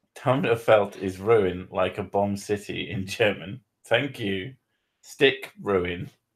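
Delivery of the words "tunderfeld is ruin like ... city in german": usual speaking voice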